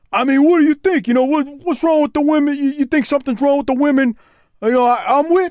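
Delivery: mock bro voice, high-pitched and indignant. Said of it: "he said something to Harper like".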